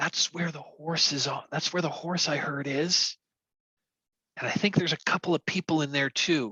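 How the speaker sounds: hushed, soft whisper. Game narrator voices a character pressing his ear to the door, whispering. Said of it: "he and he whispers".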